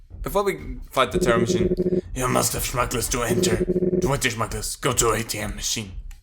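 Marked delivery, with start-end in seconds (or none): 2.1-5.9 raspy, rasping voice. Reading out a club doorman's game dialogue: raspy voice. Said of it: "such a raspy voice".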